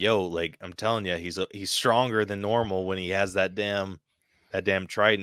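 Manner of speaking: plain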